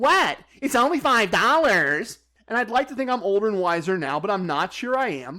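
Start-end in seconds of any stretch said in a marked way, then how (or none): 0.0-2.2 jeering mocking voice, dismissive, pitched up. Speaker retells what a man said back after being glared at: mockingly imitating his voice. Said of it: "I'm going to use the voice that he used".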